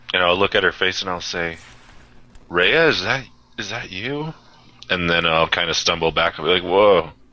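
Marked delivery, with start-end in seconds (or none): 2.5-4.3 groggy, stunned, dazed, woozy, half-there voice. A player's character, just clocked in the head, stumbles back and speaks, dazed and woozy. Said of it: "all woozy".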